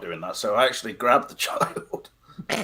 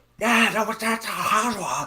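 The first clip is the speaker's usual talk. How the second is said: put-on Chinese accent, very high-pitched; 11 semitones higher than usual. Imitating what another speaker kept saying on a call: imitating someone in an accent. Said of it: "In that accent, really".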